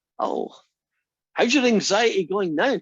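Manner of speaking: cheery, optimistic, high, loud upbeat voice. Explaining how researchers ask about anxiety, the speaker demonstrates an upbeat voice. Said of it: "that upbeat voice".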